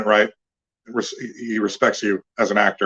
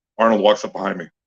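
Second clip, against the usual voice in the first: ordinary delivery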